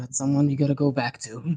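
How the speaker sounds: muttered very quietly. Voicing a woman speaking to a player's character, under her breath. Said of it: "under her breath".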